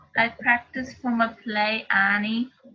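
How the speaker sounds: Welsh accent of the South Wales variety. Repeating a line after the teacher: South Wales accent. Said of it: "your South Wales or your Welsh accent".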